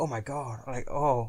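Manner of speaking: swooning, gushing moan. Retelling a woman sitting behind them at the cinema: imitating a woman moaning. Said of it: "frickin' moaning".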